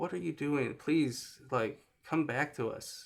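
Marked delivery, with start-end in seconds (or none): none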